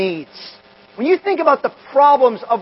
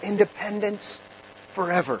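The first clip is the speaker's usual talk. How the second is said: put-on feeble murmur, much quieter; 3 semitones lower, 12 dB quieter than usual. Speaker retells an 89-year-old president's reply to a reporter, imitating a feeble murmur. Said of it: "he murmured in a feeble voice at 89 years old".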